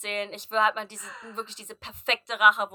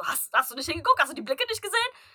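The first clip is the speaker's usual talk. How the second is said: high voice, talking while cracking up; 6 semitones higher than usual. Speaker retells what a woman asked while she could not stop laughing, retelling laughing speech. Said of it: "fängt richtig an zu lachen".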